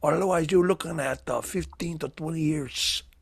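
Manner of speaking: put-on Cuban accent. Playing a DEA agent ordering a container opened: Scarface-style Cuban accent. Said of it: "it's a little Cuban".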